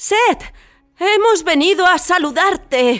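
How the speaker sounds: shaky, quavering shout, high and slow. A companion calls out a greeting to a god at a gathering, shouting with trembling voice. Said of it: "gritó Anubis con la voz temblorosa".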